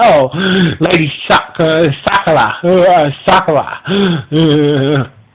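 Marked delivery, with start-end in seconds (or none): none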